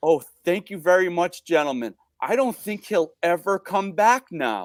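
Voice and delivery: acted, heartfelt, earnest, genuinely grateful tone. Retelling a lady thanking the officers: imitating a sincere thank-you. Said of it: "in the most sincere way".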